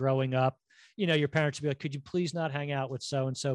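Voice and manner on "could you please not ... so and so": ordinary talk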